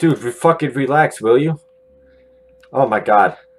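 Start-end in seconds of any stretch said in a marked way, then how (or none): 2.7-3.3 frightened, rattled, scared outburst. Reacting while a voice keeps saying calm down: scared. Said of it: "I've never been so scared".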